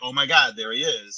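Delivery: ordinary delivery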